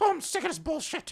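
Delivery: very high, mock-angry, fed-up cartoonish voice. Retelling a cartoon character cursing in front of a kid: mock-angry Mickey Mouse voice. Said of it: "Why is he mad?".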